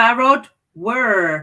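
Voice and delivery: American-sounding accent. Chatting with a co-host, a word comes out in an American-sounding accent. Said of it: "You had more of an American accent than me on that word".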